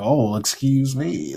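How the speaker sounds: silly, goofy, nerdy voice. Mocking how some people make nerdy corrections, goofy nerd voice. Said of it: "just make like this goofy voice".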